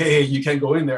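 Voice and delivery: ordinary talk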